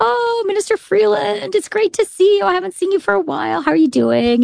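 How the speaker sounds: friendly guard voice.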